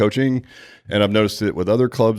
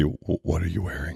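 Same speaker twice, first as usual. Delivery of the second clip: put-on deep creaky voice; 3 semitones lower, 8 dB quieter than usual. Joking about how not to answer a business phone call: put-on deep voice. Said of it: "don't do your deep voice".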